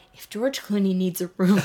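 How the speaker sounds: plain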